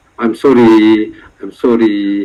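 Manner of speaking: put-on crying, fake tearful tone. Imitating someone coming to apologize in person: mock crying apology. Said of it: "I'm crying".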